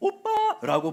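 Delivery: oppa called out laughing.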